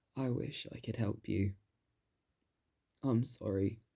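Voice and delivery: voice cracking and breaking apart. Narrator reads the jester's words as he hugs her through the bars: cracking voice. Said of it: "Through a cracking voice".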